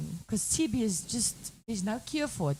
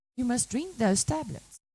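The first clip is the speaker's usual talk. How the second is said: normal talking voice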